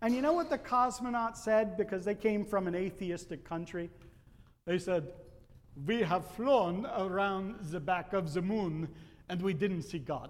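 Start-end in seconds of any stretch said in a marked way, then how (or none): 5.9-10.3 put-on French-sounding accent. Quoting what the cosmonauts said after flying around the moon, put-on French-sounding accent. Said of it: "Now that's more of a French accent".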